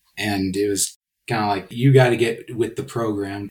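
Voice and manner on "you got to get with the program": usual speaking voice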